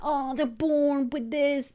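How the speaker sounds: very strong put-on French accent. Retelling what a mother said about her son: imitating a strong French accent. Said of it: "with her very Frenchy accent".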